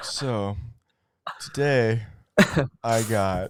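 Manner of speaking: put-on, very flat monotone delivery. Mocking the other speaker's tired talk, imitating monotone speech. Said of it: "You're speaking super monotone. You're like".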